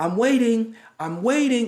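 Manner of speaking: very high, drawn-out yell. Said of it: "just yelling like".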